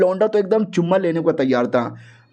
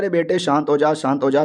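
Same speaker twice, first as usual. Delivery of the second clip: usual speaking voice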